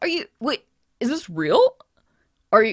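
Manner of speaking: squeaky, swooping high voice with little squeaks. Voicing a tall young man who runs over in surprise: squeaky voice. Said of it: "you squeaky little string bean".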